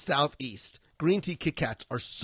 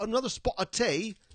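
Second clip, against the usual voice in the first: bad, laid-on Cockney accent, pitched up; 7 semitones higher than usual.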